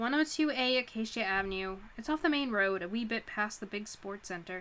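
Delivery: ordinary delivery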